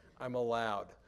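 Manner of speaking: plain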